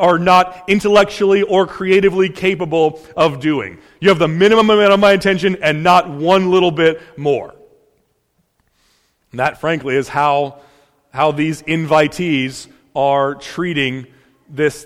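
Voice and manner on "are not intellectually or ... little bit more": usual speaking voice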